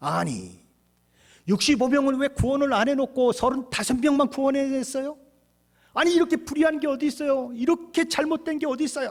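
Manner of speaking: high, loud, indignant complaining tone.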